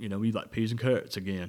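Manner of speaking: throaty, pushed from the throat, southern American accent. Explaining throat voice, then showing how to do it: Forrest Gump throat voice. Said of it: "that's all that is throat voice with a southern accent. That's how you do Forrest Gump".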